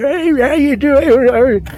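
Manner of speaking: put-on very high, slow, quavering old man voice. Imitating how a speaker sounded in a broadcast speech: old man voice. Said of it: "they get the old man voice".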